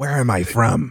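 rough, gravelly voice. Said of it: "classic Christopher Lambert gravelly voice that you can't really tell what accent".

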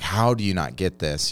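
normal talking voice

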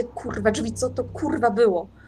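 quavering, trembling, unsteady voice. Narrating a story, voicing a character who just washed a cut hand, trembling voice. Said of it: "I tylko tak drżącym głosem słuchajcie".

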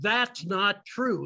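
booming shout at full volume. Recounting standing up at a talk to contradict the presenter, retelling a loud shout. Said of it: "in the loudest voice I could muster".

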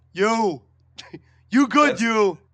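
booming, belted, slow, deliberate, drawn-out film-star voice. Doing the one De Niro line that can be done: De Niro impression. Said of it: "I got one De Niro I can do".

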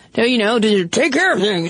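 rushed, overtly angry man's voice. Discussing how men are expected to show anger, doing an impression of an angry man. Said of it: "That's my impression of an angry man".

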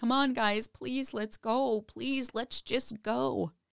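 put-on weepy pleading. Retelling footage of a mother pleading to leave: imitating someone crying and begging. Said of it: "Jackie starts crying and she's begging".

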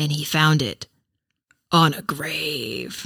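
very dramatic storyteller voice, milked for all the drama. Asked to say it once more, the storyteller tells the line very dramatically. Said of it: "You have to say it very dramatically".

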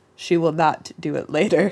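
low, all-knowing storybook narrator voice. Describing the narrator in her head commenting on her putting things off, in narrator voice. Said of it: "And the narrator says".

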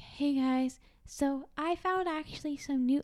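put-on tiny, high babyish voice, spoken slowly. Imitating how she sounds in her own videos, little baby voice. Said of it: "I sound like a little baby".

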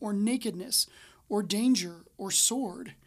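ordinary delivery

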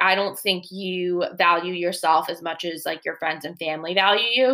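ordinary talk

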